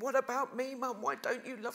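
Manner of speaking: acted-out, high, screaming, pleading cry. Retelling a soap scene acted out in the street: imitating a screamed plea. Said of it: "he's screaming".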